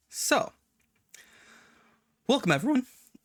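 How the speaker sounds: very high, cracking, breaking voice. Welcoming everyone at the start of the session, voice cracking. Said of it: "It's voice crack".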